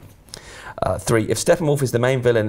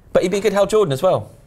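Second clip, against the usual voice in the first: shouting with voice pitched very high; 9 semitones higher than usual. Discussing superhero casting choices, shouting. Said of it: "Sorry, I'm shouting now".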